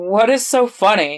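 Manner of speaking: ordinary delivery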